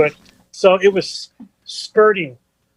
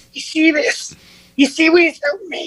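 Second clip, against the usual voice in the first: put-on raspy old man voice, pitched very high; 10 semitones higher than usual. Retelling what an older man at a bar said, imitating a raspy voice. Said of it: "he's got that raspy voice".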